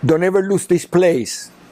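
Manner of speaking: put-on very heavy Spanish accent, laid on thick. Recalling what his late father told him, in a heavy Spanish accent. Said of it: "in very heavy Spanish accent".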